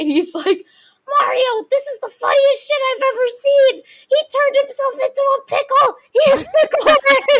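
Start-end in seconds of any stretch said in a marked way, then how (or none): 1.2-7.3 very high, loud, squeaky cartoon shriek. Acting out a meme a friend sent, speak to Mario in the Toad voice. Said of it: "the Toad voice".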